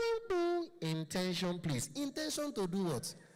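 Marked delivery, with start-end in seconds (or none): 0.0-1.9 garbled, unclear, swooping, slow tannoy announcement. Mocking the flight calls at the local airport: imitating an unclear airport announcement. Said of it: "it's never clear".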